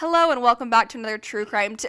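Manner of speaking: broadcast-anchor delivery. Starting the episode intro over again, sounding like a news reader. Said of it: "You sound like you're reading the news".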